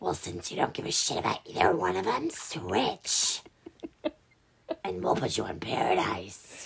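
hushed, whispered voice. Acting out what producers told a contestant, impression of a producer. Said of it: "That is a great impression of a producer".

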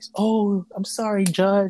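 very slow, polite put-on voice.

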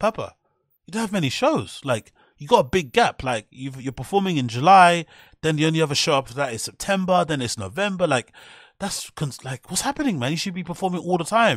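mock worried, concerned tone. Speaker retelling what Brian says in the end bit, mock-concerned. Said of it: "says in a concerning voice".

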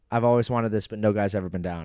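usual speaking voice

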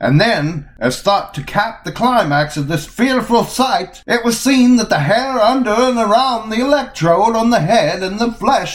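put-on very high, old-timey, antique narrator voice. Reading an old New York Times report aloud, the speaker uses an old-timey voice. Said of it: "I'm going to do them in old-timey voices".

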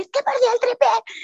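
play-acted frantic shrill panic, very high and rushed. Retelling her phone call with her brother, retelling her own hysterical panic. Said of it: "histérica".

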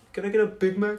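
softly spoken. Retelling a joke with friends, speaker repeats the request said quietly. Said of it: "I like quietly said".

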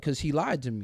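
ordinary talk, nothing marked

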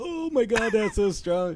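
very high, fake choked-out choking cry. Retelling a story where a man pretends to drink something strong, acting out fake choking. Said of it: "He's like all choking".

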